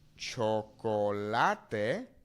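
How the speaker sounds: chocolate said with clear Spanish vowels. Teaching cognates, the speaker says the word with Spanish pronunciation. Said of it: "in Spanish".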